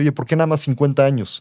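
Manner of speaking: ordinary delivery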